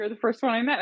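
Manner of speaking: dry, sarcastic, tongue-in-cheek delivery. Retelling what they say to people who claim to be the exception: retelling own sarcastic remark. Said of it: "sometimes I'll be sarcastic".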